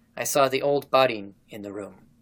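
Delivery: ordinary delivery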